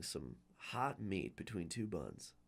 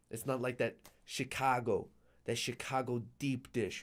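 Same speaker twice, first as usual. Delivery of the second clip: bad put-on New York accent; 5 semitones higher, 6 dB louder than usual. Comparing Italian pizza with Chicago deep dish, in a New York accent. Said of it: "Did I just use a New York accent for that?".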